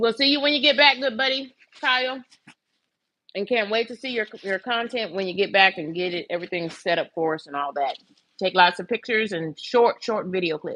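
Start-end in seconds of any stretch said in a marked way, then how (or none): 0.0-2.2 talking through a mouthful of food, pitched up. Saying goodbye to a buddy leaving on a cruise, talking with mouth full. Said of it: "I'm talking with a mouthful of food".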